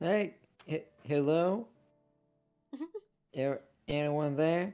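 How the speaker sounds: tiny, faint, squeaky high chipmunk voice. Narrator voices the figure trapped inside the bottle, very faint chipmunk voice. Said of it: "very faint chipmunk voice".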